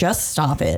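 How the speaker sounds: usual speaking voice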